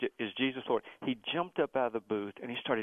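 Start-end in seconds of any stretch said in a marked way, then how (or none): none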